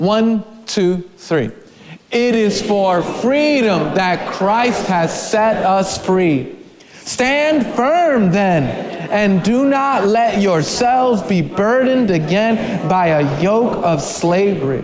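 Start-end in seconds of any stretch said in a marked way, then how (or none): 2.1-14.8 reading aloud loudly with passion. Leading a group reading aloud on the count of three, read loudly and passionately. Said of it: "We're going to read in a nice".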